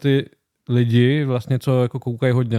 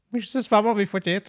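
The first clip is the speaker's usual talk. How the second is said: big man's surprisingly high, pitched-up voice; 8 semitones higher, 4 dB quieter than usual. Retelling how a huge tattooed man asked for a photo: imitating a high-pitched voice. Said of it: "on fakt měl takový vysoký hlas".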